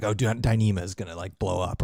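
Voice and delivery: normal talking voice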